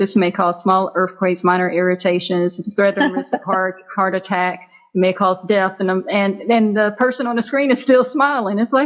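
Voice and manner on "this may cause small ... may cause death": plain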